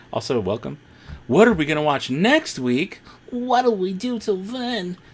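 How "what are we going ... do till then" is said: very high-pitched, cartoon-style cat voice. Asking what to watch next week: Stimpy voice. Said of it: "That was my Stimpy impression".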